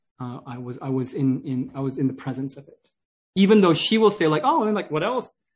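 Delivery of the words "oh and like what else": mock offhand, nonchalant tone, higher. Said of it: "says it very nonchalantly".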